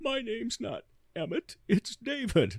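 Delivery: put-on very high, tearful crying child's voice. Recounting falling as a four-year-old and answering the man: reenacting crying as a child. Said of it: "I start to cry and say".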